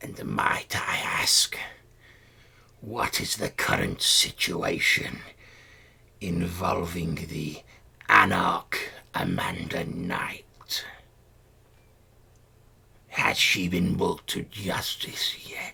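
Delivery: strained, throttled, strangulated, choked-sounding voice. Voicing a corpse-like creature that bows before the table, in a strangulated voice. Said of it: "in a sort of strangulated voice says".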